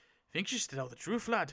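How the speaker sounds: badly done put-on Irish accent. Retelling a story scene, voicing Clara speaking to Mika: bad Irish accent as Clara. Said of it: "I can't do an Irish accent".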